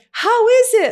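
happiest, cheeriest, very high, acted-out voice. Retelling what they said to the people at a table; retelling in happiest voice. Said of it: "in my like happiest of voices".

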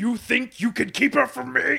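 very high, very loud, rough belted delivery. Trying an impression after wanting to do one: Wilson Fisk impression. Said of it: "an impression of Wilson Fisk".

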